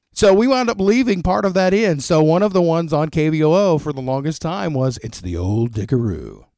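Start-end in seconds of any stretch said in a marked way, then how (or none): 5.1-6.3 deep, low radio announcer voiceover delivery. Retelling a radio station ID a voiceover guy recorded, deep voiceover-guy voice. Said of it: "we want it to be deep".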